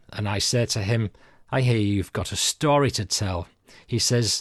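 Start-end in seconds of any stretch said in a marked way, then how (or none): none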